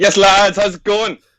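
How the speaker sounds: very loud, high-pitched hearty voice. Returning podcast guest greets the hosts as he is welcomed back, loud greeting. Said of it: "Oh, so loud".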